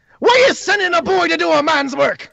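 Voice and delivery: very high, shrill, yelled shout. The game master voices a character who turns on another character, shouting. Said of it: "and shouts at Titus".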